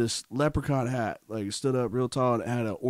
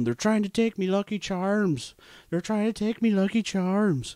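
high, pitched-up yell at full tilt; 9 semitones higher than usual. Retelling running through the school halls: retelling own past yell. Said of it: "I was yelling".

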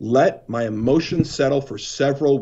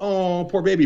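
mock sympathy, pretend pity, higher pitch; 5 semitones higher than usual. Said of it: "you almost go like".

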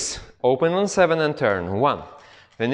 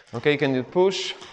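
normal talking voice

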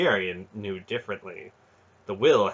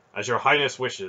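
plain

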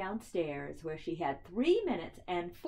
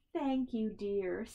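weak, feeble, faint voice; 2 semitones higher than usual. In a story, Mrs. Large answers the little one, weakly. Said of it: "said Mrs. Large weakly".

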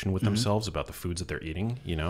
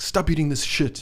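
put-on Jamaican accent, pitched up; 9 semitones higher, 4 dB louder than usual. Acting out a former bodybuilder from social media at the supermarket, imitating Eddie's Jamaican accent. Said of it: "He's got like a Jamaican accent or something".

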